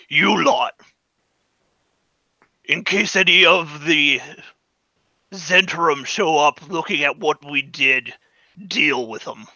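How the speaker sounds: brutish, orc-like monster voice. Narrating a game scene, the speaker voices a creature giving orders, in orc-ish voice. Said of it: "in a orc-ish voice".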